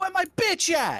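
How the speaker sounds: very high, loud yelled call. Voicing a character calling up the stairs: yelling out in character. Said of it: "just yells out".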